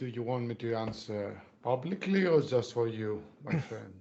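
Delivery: dropped, low-voiced tone. Narrating a story, a man answers the question whether he still doubts: low tone. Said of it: "He answers in a low tone and says".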